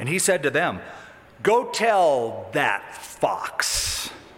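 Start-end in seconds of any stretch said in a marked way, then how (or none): 1.4-4.1 slow, drawn-out heavy sarcasm. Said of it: "that's heavy sarcasm".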